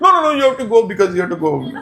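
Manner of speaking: sobbing, very high, loud and tearful. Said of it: "But he's crying".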